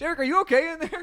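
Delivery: bewildered, baffled, very high-pitched call. Retelling his girlfriend calling through the bathroom door, imitating Starla, mock-baffled. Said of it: "Just hearing really baffled".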